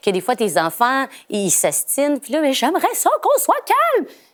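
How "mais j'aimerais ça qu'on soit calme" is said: acted, frazzled, very high, rising shout. Retelling losing calm with arguing children, imitating a parent yelling. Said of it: "Mais je suis en train de crier".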